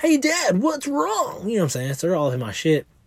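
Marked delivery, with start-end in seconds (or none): 0.0-1.5 very high, slow, drawn-out cartoonish child voice. Retelling what a child asked a crying parent: imitating a cartoon-character kid voice. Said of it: "She's like a cartoon character".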